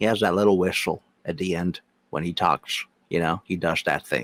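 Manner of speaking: voice dropped low. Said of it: "You sound like fucking, um, Morgan Freeman".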